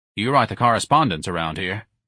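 plain

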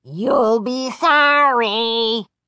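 hoarse, rasping dummy voice, "sorry" drawn out. Narrator voicing the dummy answering Chris, raspy dummy voice. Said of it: "the dummy rasped".

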